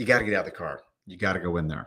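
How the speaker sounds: firm, tender, loving but very stern tone. Retelling how she told him to go in: imitating a loving but very stern order. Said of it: "lovingly, but very, very sternly say".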